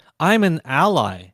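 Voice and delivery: ordinary talk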